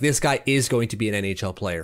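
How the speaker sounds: ordinary delivery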